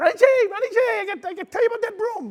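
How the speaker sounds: very high, squeaky little voice. Retell Herman Edwards answering your question about the broom on the wall, in Herman Edwards's little squeaky voice. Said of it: "He had that little squeaky little voice".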